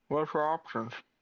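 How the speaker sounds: loud speech through a half-full mouth. Voicing a character asking about the jobs: talking with mouth half full. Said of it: "about half mouthful of food and goes".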